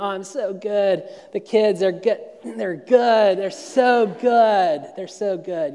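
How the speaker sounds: put-on fake cheerful tone. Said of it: "Instagram ready".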